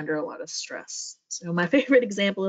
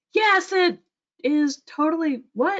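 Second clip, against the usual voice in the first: put-on baffled, confused yelling, pitched very high; 10 semitones higher than usual. Retelling an angry woman's reply to a calm colleague, retelling a confused yell. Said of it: "still yelling".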